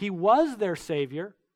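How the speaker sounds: normal talking voice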